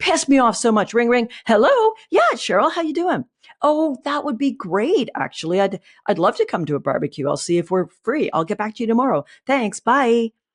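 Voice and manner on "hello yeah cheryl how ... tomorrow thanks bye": sudden switch to friendly, polite phone voice. Mimicking how you answer a ringing phone mid-argument, sudden switch to phone tone. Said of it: "change your vocal tone, your words, and your basic damn attitude".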